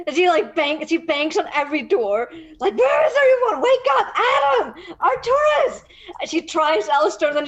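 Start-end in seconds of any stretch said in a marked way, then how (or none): 2.8-5.8 loud, high hollering and shouting. Voicing a character banging on doors to wake everyone: loudly shouting. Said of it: "You wake up the whole inn".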